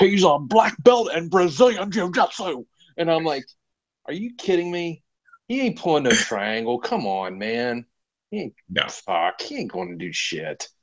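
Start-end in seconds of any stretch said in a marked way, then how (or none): 0.0-2.6 much higher, put-on fight-announcer voice. Speaker recalls hearing an announcer's call on a fighter, doing a Mauro Ranallo impression. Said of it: "that was a great impression".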